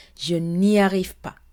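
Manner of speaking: usual speaking voice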